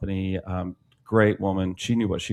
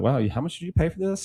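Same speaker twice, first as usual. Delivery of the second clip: teasing, joking sarcasm, pitched up; 9 semitones higher than usual. Retelling own joking remark to a client: retelling own joking sarcasm. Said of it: "I got pretty sarcastic at some point in a joking manner".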